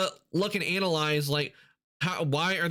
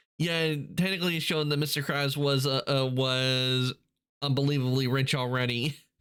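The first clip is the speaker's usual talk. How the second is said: normal talking voice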